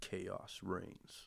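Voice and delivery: hushed, ominous talking-fox voice. Recalling a film where a fox speaks, imitating its ominous voice. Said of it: "said in like a very ominous voice".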